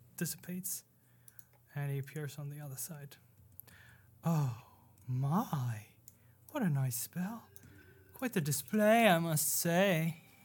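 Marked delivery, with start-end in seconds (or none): 4.3-10.2 amused, showy, coy, teasing voice, loud and theatrical. In an actual-play game, the keeper reacts to a player's ghost spell; keeper character voice.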